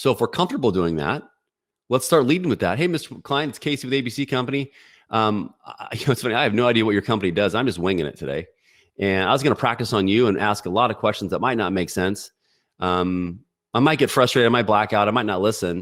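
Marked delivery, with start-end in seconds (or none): none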